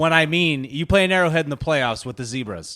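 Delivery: ordinary talk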